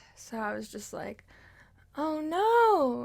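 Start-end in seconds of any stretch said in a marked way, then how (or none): 2.0-3.1 put-on high, cute, girly dismay, last word stretched. Retelling her own reaction in a dream: Home Alone oh no. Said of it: "that was Home Alone oh no".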